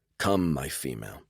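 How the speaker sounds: theatrical, showy, grand, dramatic voice. Narrator quoting what they said to their companion, in a dramatic voice. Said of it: "I said in a dramatic voice".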